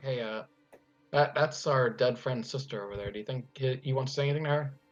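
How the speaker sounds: soft half-whisper, under the breath. Voicing a character quietly asking a friend about a ghost: half-whispering.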